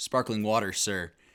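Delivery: bone-dry, totally level, flat deadpan delivery. Telling a story, he reenacts answering a man who asked about his cup: retelling a deadpan reply. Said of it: "straight face".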